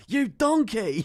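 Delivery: shrill, high, loud scream. Screaming at the charts like Gordon Ramsay at a contestant: Gordon Ramsay scream. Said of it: "Actually sounded a bit like him".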